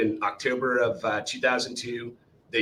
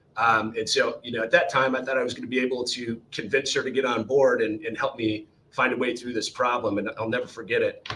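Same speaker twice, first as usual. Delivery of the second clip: usual speaking voice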